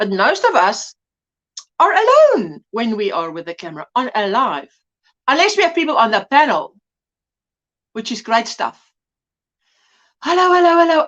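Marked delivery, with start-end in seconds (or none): 10.2-11.1 breathless, winded from running. Greeting viewers on a live stream just after running, out of breath. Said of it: "I'm actually so out of breath from running".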